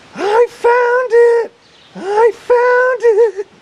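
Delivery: very high, very slow, drawn-out loud scream. Retelling a phone message from the kennel worker: imitating someone screaming. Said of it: "she's screaming".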